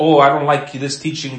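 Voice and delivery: plain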